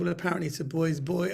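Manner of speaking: plain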